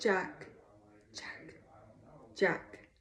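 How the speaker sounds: soft, breathy, hissing whisper, close to the mic. Reading a story, a voice calls out Jack's name: soft hissing voice. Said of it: "The voice hissed softly right into my car".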